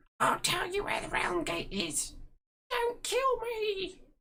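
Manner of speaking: very high, swooping, pleading goblin voice. Voicing a goblin on its knees, begging the player: goblin begging for its life.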